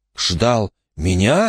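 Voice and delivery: hushed whisper. Wayne answers the speaker, whispered. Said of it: "прошептал Уэйн".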